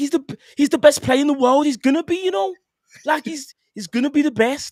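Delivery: put-on botched Scouse accent, very high and loud. Retelling what James said about a footballer: bad imitation of James's Scouse accent. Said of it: "that sounds really bad".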